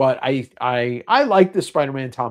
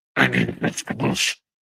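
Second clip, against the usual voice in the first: swamp creature voice; 13 semitones lower than usual. Asked to read comics in weird voices, speaker tries a Swamp Thing voice. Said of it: "my Swamp Thing voice".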